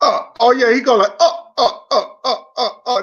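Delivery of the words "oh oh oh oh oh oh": put-on odd, very slow, drawn-out laughing oh's. Showing how a guy you find boring to listen to laughs, imitating how someone laughs. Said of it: "That's how he laugh".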